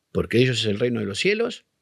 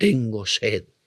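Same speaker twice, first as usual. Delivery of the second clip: imitated old man voice; 2 semitones lower than usual. Retelling what a possessed boy said: imitating an old man's voice. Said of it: "dijo con una voz de anciano".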